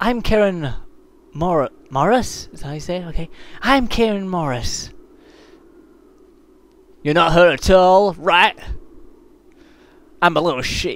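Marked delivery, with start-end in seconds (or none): 3.6-4.9 female character voice. Putting on different voices for the characters, the speaker introduces Karen Morris: Karen Morris character voice. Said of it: "I need to put different voices on".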